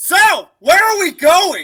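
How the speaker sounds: loud shouting in a character voice. Playing a character cursed to shout whenever speaking, shouting in character. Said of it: "I don't know why you're sh-, shouting at me".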